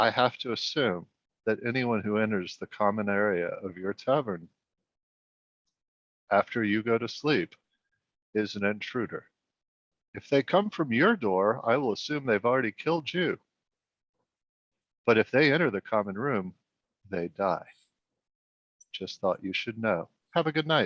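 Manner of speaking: quiet, hushed, low speaking voice. In character, stopping someone before his room to warn him: quiet, not shouting. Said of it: "lowly, like I'm not shouting this".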